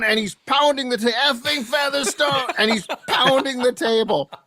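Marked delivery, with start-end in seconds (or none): 1.2-2.5 yelling in a put-on French accent. Telling a story about a man at a hockey game, quoting his shouts every time a french player appeared, yelling in an accent. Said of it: "in a French accent, he's yelling".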